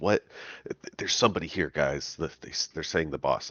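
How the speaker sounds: quiet, soft speaking. Telling the others in character that someone is here: saying quietly. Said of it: "I say quietly to them".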